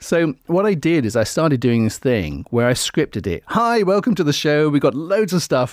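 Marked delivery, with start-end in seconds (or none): 3.5-5.7 put-on, pitched-up radio presenter patter. Recalling scripting show openings when nervous: put-on radio presenter voice. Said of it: "And I'm gone into my radio voice".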